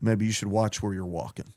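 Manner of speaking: low, grumbling mutter, under the breath. Retelling what a guy muttered under his breath as the speaker walked away. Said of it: "I heard the guy under his breath go".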